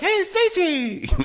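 very high, caring, nurturing voice. Recounting how a man sounded when taking on a caring role, imitating a high caring voice. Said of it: "his voice went up an octave or two".

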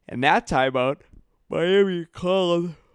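talking through a yawn. Recapping a Miami–Celtics game's timeouts, yawning while talking. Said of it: "I'm sorry, I'm yawning".

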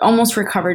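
ordinary delivery

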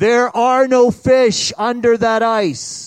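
very loud, slow, resounding booming voice. Telling a story, voicing what a man hears while drilling the ice, booming voice. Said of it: "he hears this booming voice".

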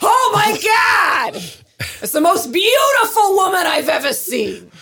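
shrill, high, drawn-out swooping yell. Retelling a man seeing a woman through her window: imitating Reichert yelling. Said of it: "He's yelling at it through her window".

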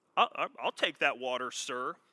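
mock, heavily sarcastic, pointed tone. Acting out the woman at the well answering Jesus: imitating a sarcastic woman. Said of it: "She's being very sarcastic".

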